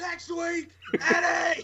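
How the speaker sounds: put-on very high, taunting, yelled voice. Retelling a wrestler's challenge to his opponent: imitating Eric Young yelling. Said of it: "basically just yells out".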